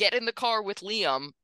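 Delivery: shouting. Recounting a scene and the speaker's reaction to it, retelling own yell. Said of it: "at which I yelled out loud".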